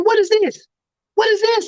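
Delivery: put-on, very high, shrill scolding yell. Recalling being scolded over a report card, the speaker retells Walter Payton's yell. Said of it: "And he's yelling at me".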